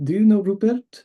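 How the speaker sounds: terrible fake French accent. Retelling asking Francis how he meditates, imitating Francis, bad French accent. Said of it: "In my terrible French accent".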